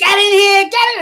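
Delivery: excited, high-pitched screaming.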